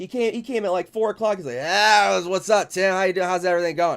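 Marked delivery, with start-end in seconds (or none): 1.6-4.0 loud, sloppy, put-on drunken man's voice. Retelling how the owner greeted him: imitating a drunk man. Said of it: "he's hammered".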